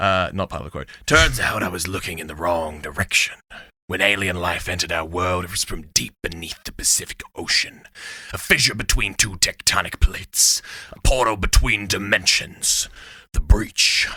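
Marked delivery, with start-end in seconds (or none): 1.1-14.1 rough, grim, gritty, hardened narrating voice. Reading a quote aloud in character, gritty voice. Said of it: "kind of more gr- gritty".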